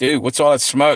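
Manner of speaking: ordinary talk, nothing marked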